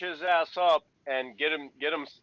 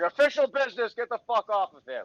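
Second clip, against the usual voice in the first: raised-pitch put-on shout; 6 semitones higher, 3 dB louder than usual. Playing a character jumping down with badges out: in-character yelling. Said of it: "start yelling".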